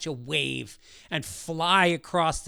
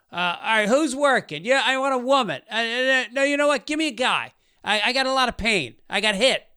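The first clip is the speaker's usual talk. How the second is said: mock, loud, high-pitched talk at full blast; 7 semitones higher, 4 dB louder than usual. Retelling a man who walked in loudly while he lay there: imitating a loud guy. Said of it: "this dude comes in real loud".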